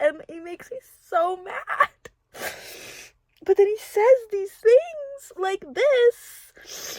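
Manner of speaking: talking through tears. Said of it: "literally crying again".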